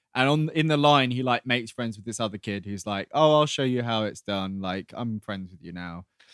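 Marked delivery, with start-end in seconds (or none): none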